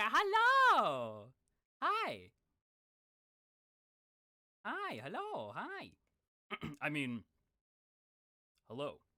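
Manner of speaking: overexcited, loud, swooping, very drawn out. Speaker greets everybody at the start, too excited. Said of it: "I'm too excited".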